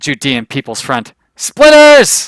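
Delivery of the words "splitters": shrill, very loud, high-pitched yell. Speaker, reminded of a film by a word, retelling a yelled movie quote. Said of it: "Sorry to yell".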